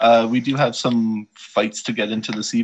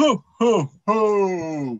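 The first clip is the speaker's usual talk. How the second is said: put-on jolly old man voice, higher; 9 semitones higher than usual. Opening the Christmas segment for everyone: Santa voice. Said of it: "my first time doing the Santa voice".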